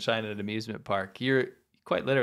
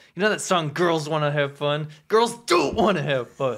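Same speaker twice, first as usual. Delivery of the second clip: loud, high-pitched, jealous, furious angry rant; 5 semitones higher, 7 dB louder than usual. Retelling what a jealous schoolmate said about his girlfriend: imitating an angry schoolmate. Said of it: "He's, like, all mad".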